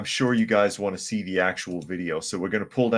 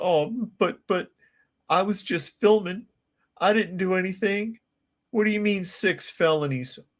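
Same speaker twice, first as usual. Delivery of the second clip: mock crying voice, higher pitch; 11 semitones higher than usual. Acting out a crying woman in her mugshot: imitating someone crying. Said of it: "She's just crying".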